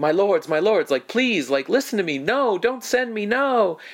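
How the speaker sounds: put-on very high, rising pleading yell. Retelling a character's plea at a trial: imitating someone yelling and pleading. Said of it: "yelling out".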